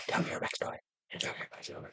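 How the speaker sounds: very soft, repeated whisper.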